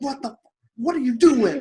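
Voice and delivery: put-on yell. Retelling panicking at a snake on the trail: imitating own yell. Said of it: "I'm yelling at Dak".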